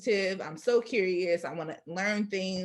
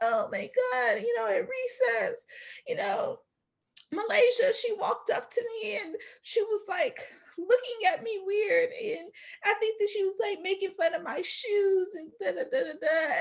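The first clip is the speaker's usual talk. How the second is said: mock, very high, slow, tearful crying whine; 13 semitones higher than usual. Retelling how a classmate complained to the circle: imitating someone crying.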